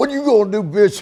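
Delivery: shrill, very high, loud, furious taunting voice. Retelling confronting a deputy at an elevator: retelling an angry taunt. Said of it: "I'm full pissed off".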